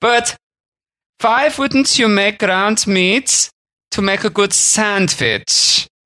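put-on German accent, very high-pitched. Retelling a german man's question to him about his sandwich: put-on german accent. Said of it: "he would have spoken a little bit like this".

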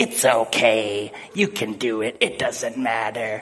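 low, very slow, dragged-out devil voice. Retelling how a guy suddenly slipped into a devil voice in front of everyone. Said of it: "he goes into this like devil voice".

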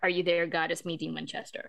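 normal talking voice

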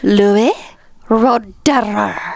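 seductive purr, rolling the r of roederer. Saying the champagne's name when asked to: mock seductive tone, rolled R. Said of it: "say the title of the bottle in a seductive tone".

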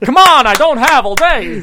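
high Italian-sounding voice. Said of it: "Very Italian".

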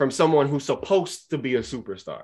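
SUPPOSED stressed with wide pitch swings.

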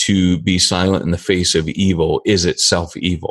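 ordinary delivery

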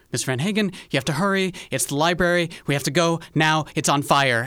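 urgent, rushed, loud, high-pitched shouting. Narrator voices a town watch guard at the door, shouting quickly. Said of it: "the town watch guard quickly shouts".

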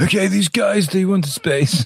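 put-on squeaky, very high elderly voice. Imagining a committee reviewing the application: Arnie impression. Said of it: "That's your Arnie impression".

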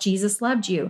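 plain

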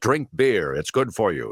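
put-on goofy, booming old-school ad voiceover announcer voice. Describing old-style ad voiceovers, demonstrating one in a big voiceover voice. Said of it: "We a big voice".

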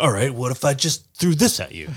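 casual bro voice. Acting out a rock-throwing monster as a bro: voicing a monster as a bro. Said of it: "he's just, like, a bro".

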